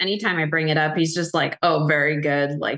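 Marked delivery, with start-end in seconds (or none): 1.6-2.6 very sarcastic, rude tone. Retelling how a boyfriend answers: imitating a sarcastic rude tone. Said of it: "very sarcastic, like, in a rude tone".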